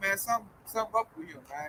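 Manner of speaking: secretive, soft, hushed stage whisper under the breath. Imitating someone telling the authorities: imitating someone half-whispering. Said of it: "he gonna start whispering".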